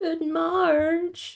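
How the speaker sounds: high, whining cartoon voice. Trying out cartoon impressions, in a whiny Homer Simpson voice. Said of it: "Homer voice would be easy because he just whinges".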